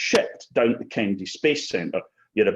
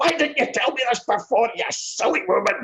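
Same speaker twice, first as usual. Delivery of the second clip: mock, very high, shrill yelling outburst; 12 semitones higher than usual. Speaker retelling a kitchen fire, quoting Duncan from the kitchen: retelling Duncan's shout. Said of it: "And then Duncan shouting".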